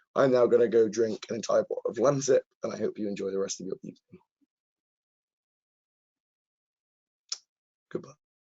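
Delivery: very croaky, hoarse voice. Signing off to viewers after half an hour, in a croaky voice. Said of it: "very croaky voice".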